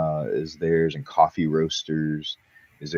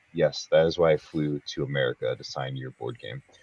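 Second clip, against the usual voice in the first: bone-dry, flat, expressionless deadpan delivery; 2 semitones lower than usual. Retelling the designer's reply to a request to sign: imitating a deadpan reply. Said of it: "just deadpan look. He goes".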